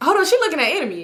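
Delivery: high voice of sudden dawning realization.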